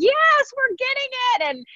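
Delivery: play-acted shrill, very high, drawn-out hollering. Retelling own hollering heard on raw audio takes: imitating own hollering. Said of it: "you hear me in there just hollering".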